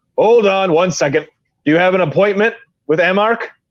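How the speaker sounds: furry bugbear monster creature voice. Voicing a bugbear who blocks the doorway and questions the players: bugbear voice. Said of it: "the bugbear looks at you and goes".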